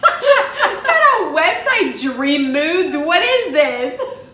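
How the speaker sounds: high, loud laughing disbelief.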